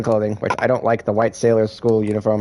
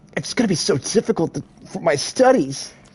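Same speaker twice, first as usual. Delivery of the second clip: put-on nerdy anime boy voice; 7 semitones higher than usual. A streamer voicing a character, in a nerdy anime schoolboy voice. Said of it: "my nerdy like schoolboy voice".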